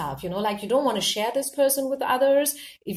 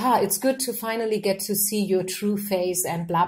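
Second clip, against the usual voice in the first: usual speaking voice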